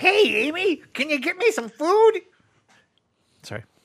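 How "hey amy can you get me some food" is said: high-pitched, slowed-down cartoon voice. Joking about a camp trip where everyone looked like Smurfs: Smurf voice. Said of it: "That was trying to be a Smurf".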